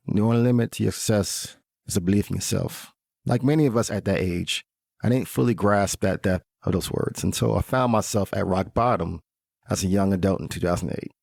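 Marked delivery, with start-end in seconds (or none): 0.2-3.0 thick, heavy imitated Jamaican accent. Giving a talk, quoting what their father always used to say, in a thick Jamaican accent. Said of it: "in his thick Jamaican accent".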